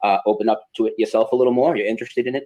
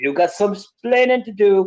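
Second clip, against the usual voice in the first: put-on Cuban accent, pitched up; 10 semitones higher than usual. Quoting a famous line while discussing misremembered quotes, Ricky Ricardo Cuban accent. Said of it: "in that tone and with a Cuban accent".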